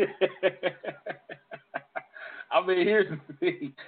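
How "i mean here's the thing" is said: laughing through the words, slightly higher pitch. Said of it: "I'm laughing because".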